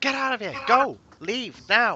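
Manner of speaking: shrill, very loud, high-pitched shouting. Voicing the people at the hideout the players have found: shouting. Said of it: "They start shouting".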